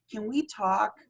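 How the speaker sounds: tiny, squeaky, little high-pitched voice. A former bouncer recalls how he talked to people: little high-pitched squeaky voice. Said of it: "little high pitched squeaky voice like that".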